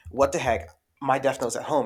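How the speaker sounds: normal talking voice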